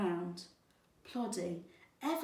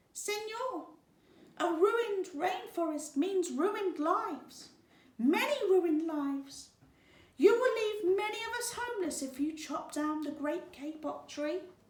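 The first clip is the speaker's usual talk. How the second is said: squeaky little tree frog voice, high piping; 9 semitones higher than usual. Narrator reads a small tree frog speaking in the man's ear, squeaky voice. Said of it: "In a squeaky voice".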